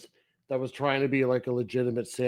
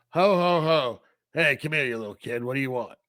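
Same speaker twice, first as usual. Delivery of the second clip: put-on character voice with no friendliness at all. Retelling what the movie's thin Santas say to kids: imitating an unfriendly Santa. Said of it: "not, like, friendly Santas".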